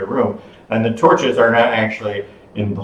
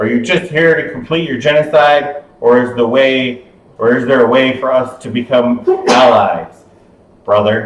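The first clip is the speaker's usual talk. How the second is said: huge, resounding, booming voice, as if from afar; 3 semitones higher than usual. Running a game, voicing an unseen figure calling out to the players: big voice. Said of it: "a big voice".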